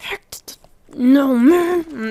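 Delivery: very slow, drawn-out, panicked whisper scream. Retelling how the speaker whisper-screamed at a man, retelling a whisper-scream. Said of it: "So I'm whisper screaming at him".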